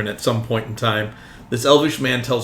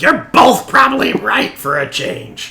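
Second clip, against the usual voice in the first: shrill, high, loud little gnome voice; 13 semitones higher, 6 dB louder than usual. As two characters talk, the gnome speaks up again: gnome voice. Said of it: "the gnome voice comes back out and he's like".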